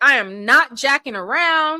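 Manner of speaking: play-acted stern, loud, serious, no-nonsense tone. Retelling a judge warning jurors about breaking rules: imitating a serious threat. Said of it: "he threatened that".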